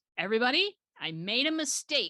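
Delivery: loud announcing voice. Retelling the boss addressing all seven designers, loud announcement. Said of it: "announces in a loud voice".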